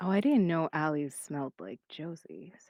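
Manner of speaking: half-whispered, soft. In a tabletop game, a character leaning in to someone, half-whispering. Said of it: "just whisper to them".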